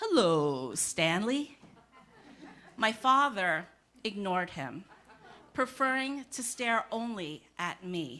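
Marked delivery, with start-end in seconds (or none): 0.0-1.6 put-on New York Lower East Side accent, low, swooping pitch. Retelling a passing man greeting the father: Lower East Side accent. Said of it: "in a Lower East Side accent".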